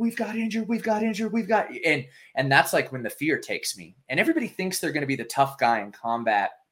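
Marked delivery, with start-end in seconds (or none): 0.0-1.7 high-pitched screaming, over and over. Retelling pounding on a blast barrier at the base; retelling his screaming. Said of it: "I'm screaming".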